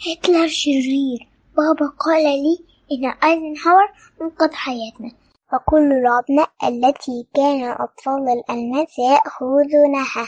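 husky, hoarse, timid, faltering, very high-pitched voice. A little girl stands when called on to share memories of the war, hoarse, shy, hesitant. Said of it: "وبصوت مبحوح خجول قالت في تردد".

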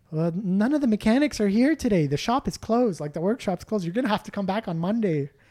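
put-on sweet, apologetic woman's voice with Canadian accent. At a closed Canadian Tire, a lady answers the door: imitating a sweet Canadian lady. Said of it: "sweet, nice Canadian lady being like".

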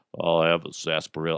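attempted deep voice, reaching down low. Imitating Sam Elliott after saying his voice is so deep: Sam Elliott voice. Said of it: "He's just like".

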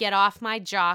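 ordinary talk

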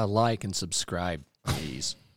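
cool, slow, smooth jazz-radio host voice. Adding a plug for the podcast at the end: smooth jazz voice. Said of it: "the smooth jazz".

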